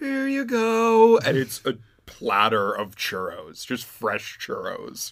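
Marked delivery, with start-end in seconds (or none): 0.0-1.2 put-on very soft voice, higher. Retelling a voice from the drive-thru window offering churros: imitating a very soft voice. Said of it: "a very soft voice".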